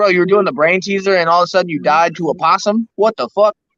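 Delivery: plain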